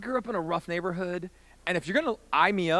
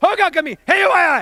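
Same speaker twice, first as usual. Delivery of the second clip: mock old man yell, much higher, louder, slower; 10 semitones higher, 12 dB louder than usual. Retelling how an old man on a packed train started at him: imitating an old man yelling. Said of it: "he's starting to yell at me".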